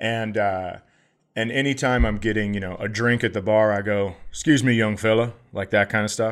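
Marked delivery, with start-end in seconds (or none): 4.3-5.3 imitated Southern drawl. Retelling ordering a drink at a bar: put-on southern accent. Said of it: "I got a Southern accent once in a while".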